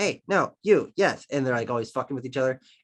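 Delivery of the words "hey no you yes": put-on slow, small robotic kid voice. Describing the show's characters teasing each other: Plug and Play robot kid voice. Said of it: "like these little robot voices of like robot kid voice".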